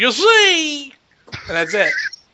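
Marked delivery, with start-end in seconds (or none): 0.0-0.9 very high voice, 'see' held long way up high. Showing the only line of a Bill Cosby impression: Bill Cosby impression. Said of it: "That's my Bill Cosby impression".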